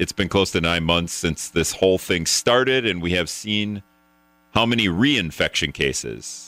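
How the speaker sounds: plain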